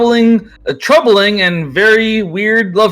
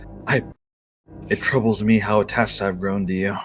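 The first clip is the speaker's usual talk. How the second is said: deep, very soft, gentle, tender half-whisper; 11 semitones lower, 9 dB quieter than usual. Playing Lionel, holding the listener's character in his arms, half-whispering to her. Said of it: "and he whispers".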